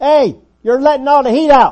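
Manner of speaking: shrill, very loud, high-pitched shout. Acting out a person holding the back door open, yelling: yelling. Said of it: "yelling at the person holding the front door open".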